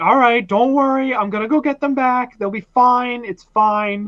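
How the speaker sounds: high-pitched, frantic, panicking voice. Comparing a monster to a panicking mom, speaking in a panicking mom voice. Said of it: "Like a panicking mom".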